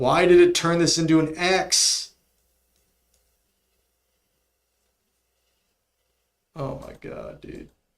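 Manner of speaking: loud, fed-up, exasperated, pissed-off outburst. Reacting to a program that turned their typing into an x; pissed off. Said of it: "I'm so pissed off".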